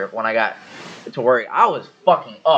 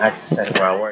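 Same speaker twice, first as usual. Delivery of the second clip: ordinary talk, nothing marked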